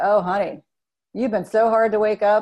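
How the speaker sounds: amused, mocking words carried on a chuckle. Retelling what the nurse said on waking, imitating a nurse laughing. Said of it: "the nurse was laughing".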